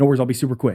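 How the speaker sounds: mimicked rushed speech. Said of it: "They start talking faster".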